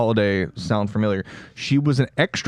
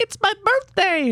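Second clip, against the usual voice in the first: put-on squeaky, very high little girl ghost voice. Imagining a little girl ghost announcing her birthday: little girl ghost voice. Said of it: "the little girl ghost going up and being like".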